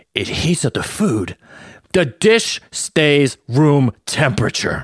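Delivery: mock thrilled, wondering dad voice, high and sing-song. Remembering the family's first microwave, imitating dad's excitement. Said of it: "the excitement in my dad's voice".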